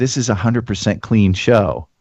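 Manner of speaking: mock whispering. Retelling how a woman at an open mic spoke: imitating someone whispering. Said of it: "she whispers in my ear".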